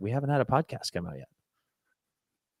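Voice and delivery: very calm, slow, quiet, unhurried voice. Retelling their own answer to a fan's screaming voice notes, retelling a calm reply. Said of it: "I very calmly replied".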